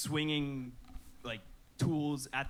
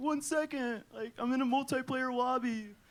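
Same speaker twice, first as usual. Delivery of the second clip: high-pitched, dismissive, brushing-off dad voice. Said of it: "And he's like".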